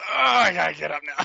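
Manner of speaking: rough, high, loud, grunting effort voice. Retelling how a bandmate got up on stage: imitating a grunty voice. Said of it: "that grunty".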